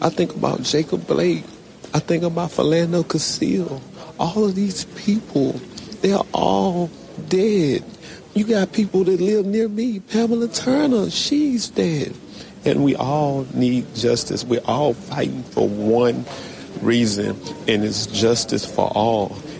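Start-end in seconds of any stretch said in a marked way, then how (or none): 0.0-12.1 high, rising emotional voice. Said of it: "you can hear the emotion in his voice".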